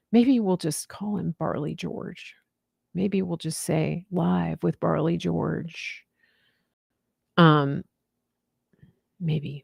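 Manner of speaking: whispering. Host musing about who will be on the show, whispering. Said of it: "I'm whispering".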